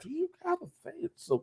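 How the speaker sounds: very high-pitched, scandalized, pearl-clutching mama voice. Imitating the other speaker's mom scolding: imitating a pearl-clutching mom.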